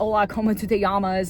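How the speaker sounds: Spanish spoken in a jokey American accent. Jokingly speaking spanish the way english speakers do: spanish with american accent. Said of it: "I like to kind of speak Spanish with the American accent".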